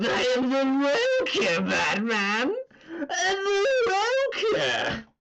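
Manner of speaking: high, slow cackling character voice. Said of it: "tried to do the Mark Hamill voice".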